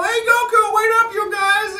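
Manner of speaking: very high, loud cartoon sidekick voice. Voice actor showing how the original Krillin sounded, original Krillin voice. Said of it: "the original Krillin sounded something like this".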